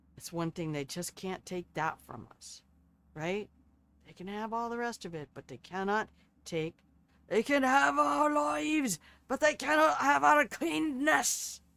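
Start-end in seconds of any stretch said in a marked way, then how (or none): 7.3-11.6 terrible fake Scottish accent, pitched up. Signing off to the kids, speaker speaks in a terrible Scottish accent. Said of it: "That is a terrible Scottish accent".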